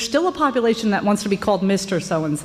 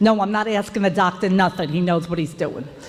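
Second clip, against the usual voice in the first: put-on speaking with New York accent. Quoting their father to the audience, in a new york accent. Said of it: "says in his New York accent".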